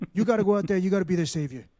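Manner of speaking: New York guy voice. Retelling how an actor plays a Bible role: imitating Harvey Keitel as a New York guy. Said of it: "he just sounds like this New York guy".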